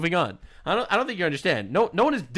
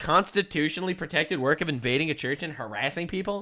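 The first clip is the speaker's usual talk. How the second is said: normal talking voice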